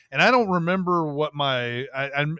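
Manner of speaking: usual speaking voice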